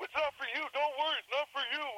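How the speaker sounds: acted, very high, extremely defensive tone. Retelling the managers' reply when asked if you should worry, mocking extremely defensive raised tones. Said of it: "in the extreme defensive and raised tones".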